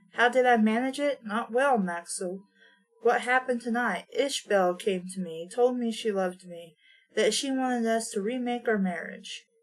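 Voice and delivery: ordinary delivery, nothing marked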